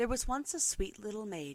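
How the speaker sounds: ordinary delivery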